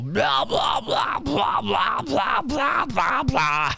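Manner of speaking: very high, drawn-out, amateur scream vocals. Mocking heavy scream vocals, attempt at screaming. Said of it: "That's my attempt at screaming".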